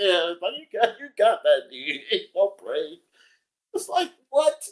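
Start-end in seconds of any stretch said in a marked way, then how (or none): 0.6-3.0 insincere, sarcastic, mocking tone. Retelling a commenter's reply to a post: imitating sarcastic praise. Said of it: "You ain't sarcastic".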